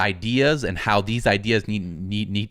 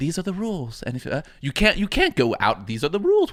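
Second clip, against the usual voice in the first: put-on snooty, stuck-up elitist voice, swooping pitch; 8 semitones higher than usual. Retelling how a story explains its arena rules, elitist snobby voice. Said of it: "say it in this very elitist and snobby voice".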